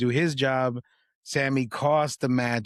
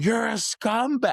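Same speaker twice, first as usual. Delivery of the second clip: mock high-pitched, screaming yell; 10 semitones higher than usual. Recalling watching TV, retelling own screaming. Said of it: "I'm screaming through".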